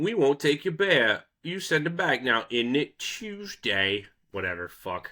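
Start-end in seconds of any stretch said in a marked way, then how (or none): 0.0-4.1 clumsy, bad fake British accent, pitched up. Acting out the Brits on the boat refusing the bear, in a bad British accent. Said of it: "But just being like".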